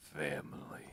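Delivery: very quiet, soft voice with larynx held down. Trying an accurate Vin Diesel voice with the larynx held down. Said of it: "an accurate, uh, Vin Diesel".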